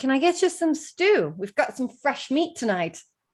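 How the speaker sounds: put-on light Scottish accent. Voicing an innkeeper asking what the guests want: slight Scottish accent. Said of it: "She's, like, Scottish now".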